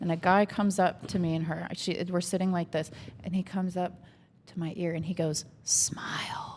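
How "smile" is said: soft, hushed whisper. Retelling how a stranger at a bar came up to the ear: imitating a whisper. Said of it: "Whispering smile?".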